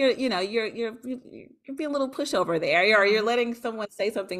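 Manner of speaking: normal talking voice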